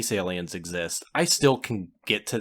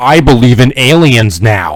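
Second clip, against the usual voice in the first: booming, very loud, very slow, drawn-out delivery; 17 dB louder than usual. Retelling a movie scene in a bar: loud Nick Fury impression. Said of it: "Nick Fury very loudly goes".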